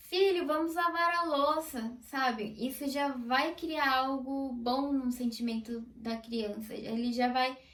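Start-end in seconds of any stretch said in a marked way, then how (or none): 0.0-2.0 bright, joyful, cheerful, happy tone. Acting out a parent speaking to a child with joy: put-on cheerful tone. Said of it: "com alegria".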